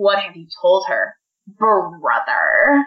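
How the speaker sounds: put-on scornful, contemptuous sneer with swooping pitch. Discussing a book, a reader quotes Rand's line, mock-contemptuous. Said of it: "he says it with so much contempt".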